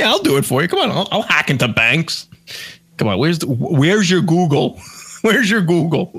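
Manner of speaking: put-on Russian accent character voice. Joking that a friend searching online is a Russian hacker: imitating a Russian hacker. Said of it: "would make a great, like, Russian hacker".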